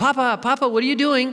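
put-on very high, tiny little child's voice. Retelling little children who followed him and knocked on his door, small child's voice. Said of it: "I hear this little voice".

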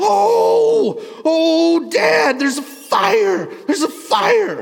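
put-on very high, loud, very slow childlike shriek. Retelling how a daughter screamed from the window: imitating a child screaming. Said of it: "she starts screaming".

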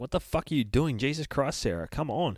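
panicky, agitated, frantic, freaked-out outburst. Retelling a comic scene where Sarah is dragged underwater, retelling Damien freaking out. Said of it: "he's freaking out".

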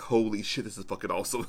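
plain

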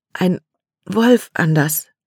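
shaky, trembling voice full of fear. A frightened girl runs to her stepbrother to warn him, trembling, frightened voice. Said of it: "Kates Stimme zitterte".

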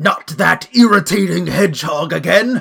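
high, drawn-out, slow, loud villain shout. Retelling a game cutscene as the villain attacks: Eggman voice. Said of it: "as Eggman shouts".

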